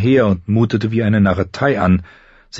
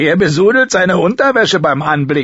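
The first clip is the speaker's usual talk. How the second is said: mocking, jeering, pitched-up exclamation; 9 semitones higher, 3 dB louder than usual. Chet calls out among the rangers while Sam reports to Mormont, exclaiming. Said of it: "rief Chet aus".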